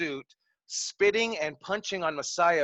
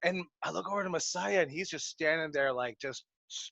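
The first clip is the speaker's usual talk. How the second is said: plain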